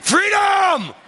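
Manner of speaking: shrill, very high screamed rallying battle cry. Reenacting the speech's ending yell for the congregation: screaming like William Wallace. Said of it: "And he screams it out".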